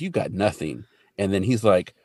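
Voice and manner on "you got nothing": normal talking voice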